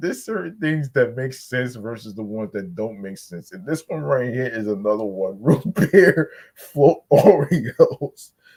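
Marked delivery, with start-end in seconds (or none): 5.4-8.3 very loud, drawn-out, slow speech through laughter. Speaker addressing the folks watching, laughing while talking. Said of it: "I'm sorry for laughing".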